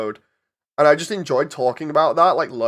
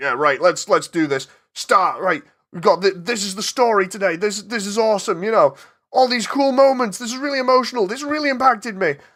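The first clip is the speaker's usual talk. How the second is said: mock, hyped, over-the-top excited rambling, rising energy; 6 semitones higher than usual. Imitating own old videos, going balls to the wall: imitating own over-the-top hyped self. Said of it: "It's literally just me balls to the wall".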